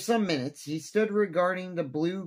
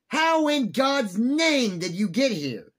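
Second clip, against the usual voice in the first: shrieking, startled, high, loud scream; 7 semitones higher, 5 dB louder than usual. Narrator reads the general finding a man hidden by his bed, screaming. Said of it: "screamed the general".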